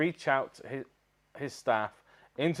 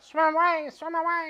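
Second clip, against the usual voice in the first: squeaky, very high, slow, drawn-out fish voice. Acting out fish fleeing the parted sea: fish impression voice. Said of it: "Was that your fish impression?".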